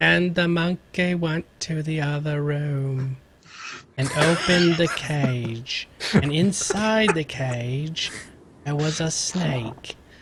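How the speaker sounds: very slow, bone-dry monotone. Imitating the reader of a free audiobook, with the driest voice ever. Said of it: "she's got the driest voice ever".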